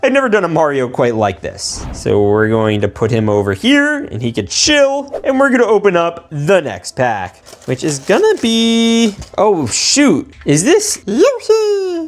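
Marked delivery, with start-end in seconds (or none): 10.4-12.1 very high cartoon voice, jumping way up. Unboxing Mario toys, the speaker opens the next pack: Yoshi impression. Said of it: "That was my impression of Yoshi".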